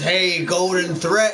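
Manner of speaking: puppy voice made to sound horrible. Speaking for the puppy as it greets someone, voicing Ruby. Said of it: "That's the puppy's fucking voice".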